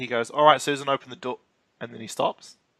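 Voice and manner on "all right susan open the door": ordinary delivery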